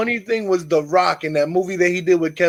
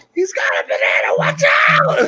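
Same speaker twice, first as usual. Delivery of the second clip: put-on, held-back, mild scream-like yell; 12 semitones higher than usual. Retelling a movie scene, imitating Kevin Hart screaming. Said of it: "And Kevin Hart screaming".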